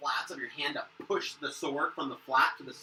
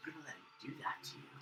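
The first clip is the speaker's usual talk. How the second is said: whisper, quieter; 15 dB quieter than usual. Voicing a whisper that taunts a raging player character: whispering voice. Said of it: "you're a whisper that says".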